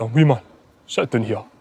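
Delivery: deep, big-man voice. Retelling a teammate's words in the dressing room: imitating a big deep voice. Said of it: "big deep voice".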